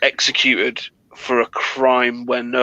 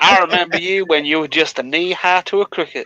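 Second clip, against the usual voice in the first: put-on Southern accent, pitched higher; 5 semitones higher than usual. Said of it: "he talked in the Southern accent".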